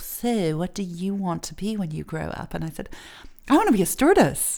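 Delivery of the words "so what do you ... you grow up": put-on snooty English accent, slower pace. Retelling a guidance counselor's question to the speaker, imitating a snooty english accent. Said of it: "had that sort of snooty accent".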